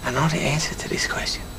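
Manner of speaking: low, soft whisper, muttered to himself.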